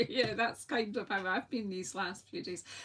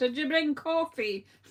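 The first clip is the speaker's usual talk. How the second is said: put-on big, booming voice; 4 semitones higher, 6 dB louder than usual. Speaking to Cindy, who is only half listening, in a big voice. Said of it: "I'll put on a big voice".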